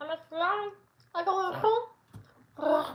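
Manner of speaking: very high, very slow, drawn-out cat voice. The speaker decides to do another cat voice. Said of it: "I gotta do another cat voice".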